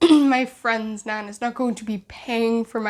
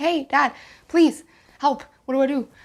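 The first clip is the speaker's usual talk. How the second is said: mock pleading, tearful, on the edge of tears; 3 semitones higher than usual. Retelling asking dad for help on the phone: retelling pleading in tears. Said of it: "on the phone in tears".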